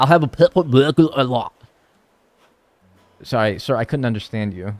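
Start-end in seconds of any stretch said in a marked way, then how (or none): 0.0-1.5 put-on Scottish accent. Acting out a drive-through order, the customer ordering in a Scottish accent. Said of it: "Scottish accent aside".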